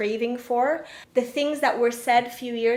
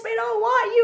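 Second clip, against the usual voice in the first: put-on scream, higher pitch; 11 semitones higher, 4 dB louder than usual. Retelling how a casting director screamed at her: imitating a screaming casting director. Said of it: "She was screaming at me".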